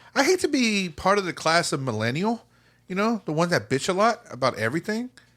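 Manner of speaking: every phrase rising in pitch like uptalk. Complaining about millennials, voice rising like a question: rising intonation like a question. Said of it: "talking like there's a question mark at the end".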